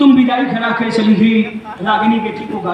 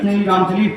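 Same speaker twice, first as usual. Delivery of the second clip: ordinary talk, nothing marked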